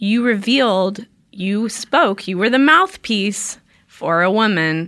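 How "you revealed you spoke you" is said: usual speaking voice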